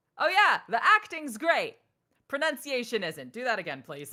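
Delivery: very loud, blunt, matter-of-fact, swooping delivery. Speaker retells a man's feedback on their performance, imitating a blunt man. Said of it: "he was nice but blunt".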